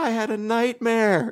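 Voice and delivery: mock, very high, slow, tearful child's crying. Retelling a child bursting in at night after a nightmare: imitating a crying child. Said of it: "crying and says".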